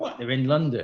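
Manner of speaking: ordinary talk, nothing marked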